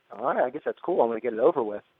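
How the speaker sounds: ordinary talk, nothing marked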